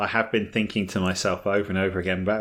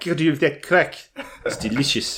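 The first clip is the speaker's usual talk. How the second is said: terrible fake Irish accent, pitched higher; 6 semitones higher than usual. The speaker jokes around with another speaker on the show: bad Irish accent. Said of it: "It's terrible".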